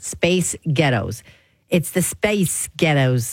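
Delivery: attempted Scottish accent, words run together. On a radio show, trying a word trick in a Scottish accent. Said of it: "it'll sound like a Scottish accent".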